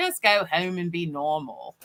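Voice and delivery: put-on Australian accent. Quoting a retreat leader's advice about going home: Rebecca Campbell's Australian accent. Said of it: "an Australian accent".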